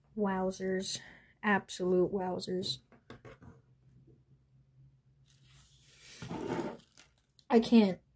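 slow, hushed whisper, overcome with emotion. Speaker marvels at a set of masks, getting emotional. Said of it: "I'm getting emotional over this".

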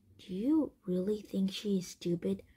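plain

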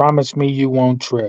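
normal talking voice

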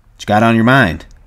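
ordinary delivery, nothing marked

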